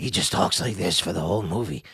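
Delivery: low, rough, rasping throat-voice impression.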